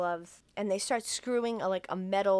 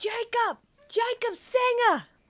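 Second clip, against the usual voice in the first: very high, screamed delivery; 4 dB louder than usual. Recounting how the chiropractor arrives looking for someone: retelling a scream. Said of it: "And he's screaming".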